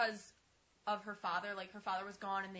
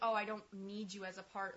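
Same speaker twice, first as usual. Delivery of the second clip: normal talking voice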